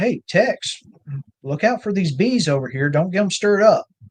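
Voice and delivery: high, hollered call.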